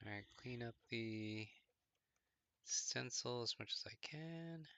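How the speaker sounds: worn-out, tired whisper. Cleaning up a stencil late in a work session, speaking in a tired whisper. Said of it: "I'm whispering now".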